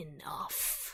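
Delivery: rasping, whispered hiss through a broken voice. Voicing a wounded figure clutching his bleeding throat: hissing, rasping broken voice. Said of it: "hissing and rasping it through his broken voice".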